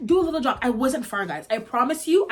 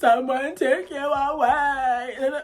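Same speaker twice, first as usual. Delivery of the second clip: mock sobbing, bawling. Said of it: "started just bawling like a baby".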